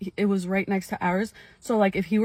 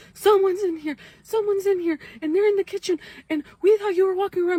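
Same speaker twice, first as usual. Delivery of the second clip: very high, tearful crying yell; 11 semitones higher than usual. Retelling how they and their sister called for their dad: retelling crying and yelling. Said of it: "me and my sister just start crying and yelling".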